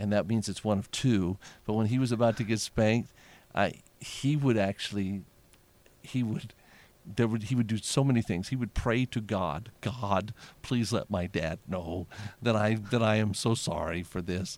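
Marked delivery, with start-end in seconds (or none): 9.8-14.6 earnest, pleading tone in a put-on child voice. Retelling a child's prayer to god before being spanked: imitating a child pleading. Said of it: "Like he's pleading that God would understand".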